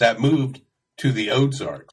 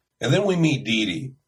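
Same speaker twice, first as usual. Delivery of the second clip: ordinary talk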